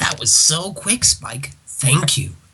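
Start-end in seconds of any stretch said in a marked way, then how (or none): 0.0-1.5 sarcastic, whispered tone. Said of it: "I was being sarcastic".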